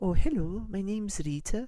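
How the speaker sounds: high-pitched Welsh accent. Trying out voices for Rita, asking the group to choose: Welsh accent. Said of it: "the Welsh one".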